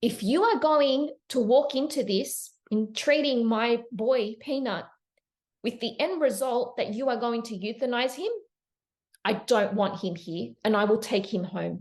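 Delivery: very firm, measured, level tone. Retelling own words to a vet about a pet: retelling own firm tone. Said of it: "my tone was very firm with her".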